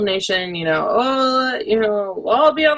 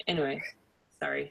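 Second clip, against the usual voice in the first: normal talking voice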